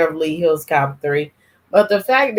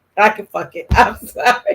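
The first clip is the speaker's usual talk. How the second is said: ordinary delivery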